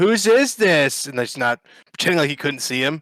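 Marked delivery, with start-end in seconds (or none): 0.0-1.1 put-on loud, high shout, escalating in volume. Retelling the agent repeating the question louder: imitating someone getting louder. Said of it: "they just kept getting louder with it".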